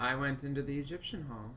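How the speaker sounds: level, flat, uninflected monotone drone. A character answering questions about the Egyptian hall, flat monotone. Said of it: "And now [name]'s back, all monotone and fucky".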